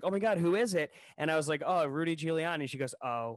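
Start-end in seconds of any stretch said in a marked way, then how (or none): 0.0-0.9 play-acted, bursting with eager excitement, high voice. Retelling how a passing girl overheard the speaker and a friend, mimicking her super excitement. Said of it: "gets super excited".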